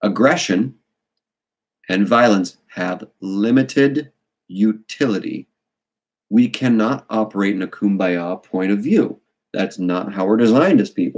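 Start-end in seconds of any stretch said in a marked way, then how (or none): 0.0-9.2 slow, measured, deliberate, each word placed. Repeating his point so no one can misquote him, spoken slowly. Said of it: "let me say it slowly".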